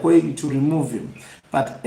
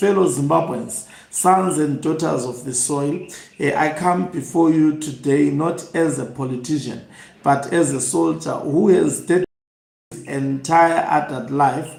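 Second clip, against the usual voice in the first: usual speaking voice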